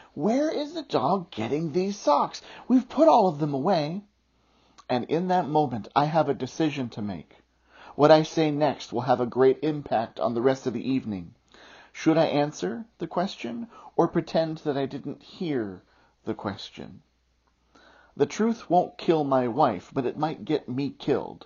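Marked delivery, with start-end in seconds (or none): 0.2-4.1 high, loud, incredulous tone. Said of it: "look at me in disbelief and ask".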